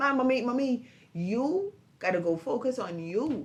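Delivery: slow, firm, serious delivery. Retelling what the daughter told her: imitating daughter talking firmly. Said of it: "she was talking to me dead strong".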